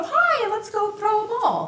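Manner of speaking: very high, slow, swooping, playful sing-song voice. Speaker demonstrating how to talk to a dog you want to play with, playful voice for a dog. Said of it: "If you want them to play".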